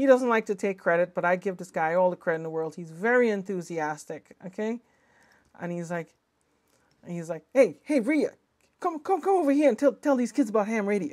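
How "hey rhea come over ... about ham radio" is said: thick put-on Jersey accent, much higher pitched. Rhea quotes friend Vince calling Rhea over, imitating Vince's thick Jersey accent. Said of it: "with a real thick Jersey accent".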